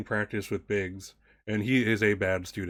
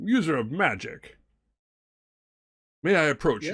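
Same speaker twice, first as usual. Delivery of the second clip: put-on pitched-up old man voice; 6 semitones higher than usual. Voicing an old robed man who approaches a player: voicing an old man. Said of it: "this old man approaches Jude, and, uh, he's like".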